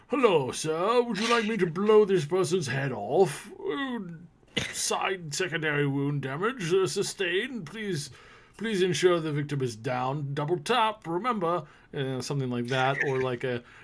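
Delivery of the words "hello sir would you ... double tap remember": put-on high-pitched elderly British gentleman voice. Describing the talking sidearm he wants; old British guy voice. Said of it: "in the voice of an old British guy".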